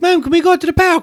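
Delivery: put-on very high, affected, ridiculous posh British accent. Imagining how annoying someone would be, doing a ridiculous posh British accent. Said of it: "affecting a ridiculous posh British accent".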